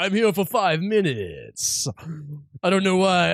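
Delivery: put-on vampire voice with Southern accent. Speaker imagining what a cameo actor would say, in a southern-accent Dracula voice. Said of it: "I've sort of got like a southern accent Dracula going on now".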